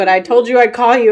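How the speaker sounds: normal talking voice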